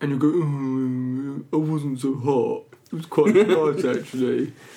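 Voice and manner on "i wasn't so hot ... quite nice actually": regal, upper-class English voice. Mocking the listener's update on wearing shorts for a day, in a Prince Charles voice. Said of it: "[name] is Prince Charles in this".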